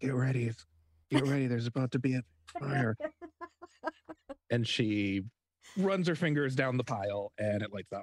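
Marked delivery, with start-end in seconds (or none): 0.0-3.0 hushed whisper. A character whispers into her wrist before lighting a pile of newspaper: whispering. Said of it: "she whispers into her wrist".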